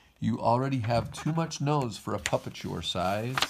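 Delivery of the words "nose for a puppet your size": ordinary delivery, nothing marked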